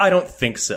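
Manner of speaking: put-on curt, huffy tone. Speaker retelling how an invited guest refused to greet the fans, mimicking a huffy refusal. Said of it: "And she storms away".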